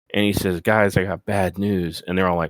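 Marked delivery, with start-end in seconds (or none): 0.6-2.1 mock glum, defeated, dejected and downcast delivery. Retelling a wrestling segment, imitating Paul Heyman sounding dejected. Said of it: "he's looking kinda dejected".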